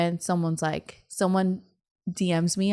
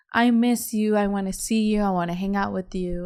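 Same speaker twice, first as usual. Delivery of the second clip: put-on drunken tearful crying voice; 3 semitones higher than usual. Retelling a sister's call from the night before: imitating drunk crying. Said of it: "drunk, crying, like".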